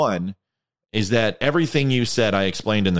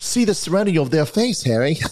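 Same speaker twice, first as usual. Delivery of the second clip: put-on English accent, pitched up high; 8 semitones higher than usual. Reading a joke aloud, voicing the Englishman: Harry Potter English accent. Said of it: "I gotta get a Harry Potter".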